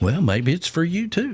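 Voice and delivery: commercial announcer voice. Retelling a commercial where he does his smile: imitating Tom Selleck in an ad. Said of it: "he's like".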